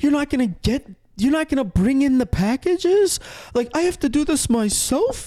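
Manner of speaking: mock high-pitched yelling. Retelling how a neighbour in the front yard started yelling: imitating a neighbour yelling. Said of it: "she starts yelling".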